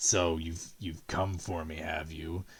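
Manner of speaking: deep, low, core-shaking rumbling voice. Narrator voicing a lipless being whose voice everyone hears, deep rumbling voice. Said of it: "this deep rumbling voice that shakes you to your core".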